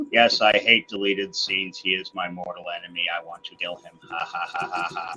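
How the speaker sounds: flat, emotionless, deadpan monotone delivery. In a mock Mortal Kombat rivalry bit: deadpan monotone. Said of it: "I can't get my voice any more monotone".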